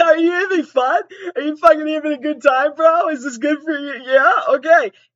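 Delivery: put-on sobbing. Retelling own past words during sex while visibly sobbing: mock crying.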